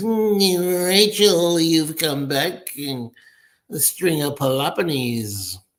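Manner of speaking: hammy, nasal, high, slow, with "mm" stretched out. Speaker quotes a bad-acting scene from a TV show; Ralph's nasal bad-acting voice. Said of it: "talks with a nasal voice".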